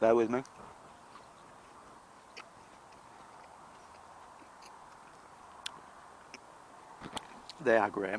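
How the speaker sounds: talking with mouth full. Tasting what they picked, the speaker talks with mouth full. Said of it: "Talking with my mouth full".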